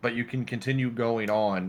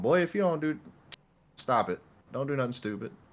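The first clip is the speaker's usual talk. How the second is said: stern, scolding tone; 4 semitones higher than usual. Retelling how grandma scolds from the backseat: imitating grandma scolding. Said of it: "my grandma's just sitting in the backseat of my car going".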